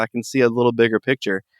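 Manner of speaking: plain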